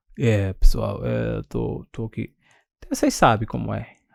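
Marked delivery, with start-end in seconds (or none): 0.2-2.4 put-on sick croaking voice, slow and rough. Imitating a worker faking illness in an audio to the team: imitating a fake sick voice. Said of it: "com aquela voz de".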